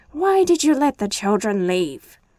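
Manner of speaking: loud, furious, shrieking witch's screech. Reading a story aloud, the angry witch line: screeching.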